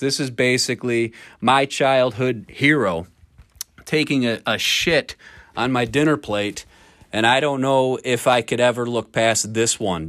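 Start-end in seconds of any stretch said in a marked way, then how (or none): none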